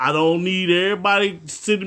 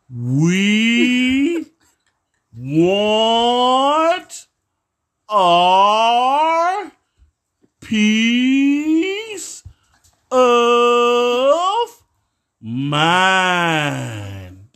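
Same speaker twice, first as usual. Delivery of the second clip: very slow, halting, word-by-word delivery; 4 semitones higher, 3 dB louder than usual. Speaker repeats the point for listeners who didn't understand, very slow. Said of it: "I'll say it slow so you can understand it".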